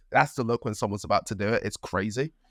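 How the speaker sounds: usual speaking voice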